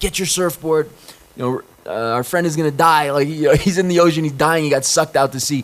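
put-on high, panicked, desperate screaming. Speaker retells running to a bar to scream at a friend, retelling screaming at a friend. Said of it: "I'm screaming at my friend".

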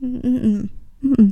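high, tearful, choked-up mm-mm.

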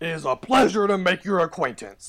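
very loud, high talking-axe voice. Voicing a magic battle axe that lights up and greets its wielder: talking axe voice. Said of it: "lights up and goes".

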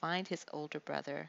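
plain

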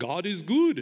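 put-on accent from Liberia. Describing a common greeting at worship gatherings, in a Liberian accent. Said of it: "in a Liberian accent".

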